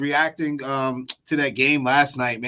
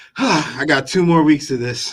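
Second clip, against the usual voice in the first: mock sad, weary sighing voice. Imitating another speaker saying "sixteen": imitating someone sounding sad. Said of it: "so sad when you said sixteen".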